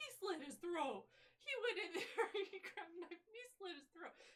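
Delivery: loud, high Minnesota accent. An actor who played Nurse Ratched jokingly does her final monologue: Nurse Ratched with Minnesota accent. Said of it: "as Nurse Ratchet but with a Minnesota accent".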